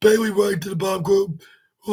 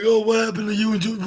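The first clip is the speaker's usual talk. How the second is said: mocking, sarcastic, taunting voice. Fan recapping a wrestling match, quoting a wrestler's taunt in a sarcastic voice. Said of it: "With her in the sarcastic voice".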